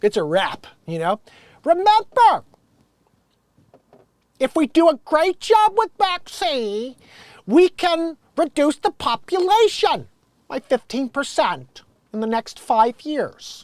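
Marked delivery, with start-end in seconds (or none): 1.6-13.6 put-on voice pitched very high, spoken slowly. Performing a vaccine line as Bill Gates: Bill Gates impression. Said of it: "I start doing the Bill Gates impression".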